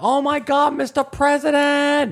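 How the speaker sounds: thrilled, very high-pitched, slow, drawn-out excited voice. Retelling Short Round meeting the President: imitating Short Round, excited. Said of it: "That's how he sounds".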